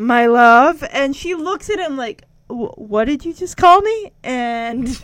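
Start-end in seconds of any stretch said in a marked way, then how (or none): 0.0-0.8 put-on disgust, lower, words forced out. Retelling a scene where he forces an endearment at her, mock-disgusted, forcing words out. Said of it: "trying to hold back the vomit out of his mouth".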